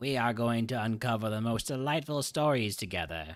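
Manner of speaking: happy, warm, cheerful, delighted storyteller voice. Reading a game character's line aloud: Bing Bong voice. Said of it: "That's my Bing Bong impression".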